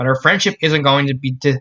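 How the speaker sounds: ordinary delivery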